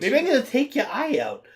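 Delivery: high cartoon-cat voice. Retelling the crazy agent's threats: Meowth voice. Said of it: "making him sound like Meowth from Pokemon".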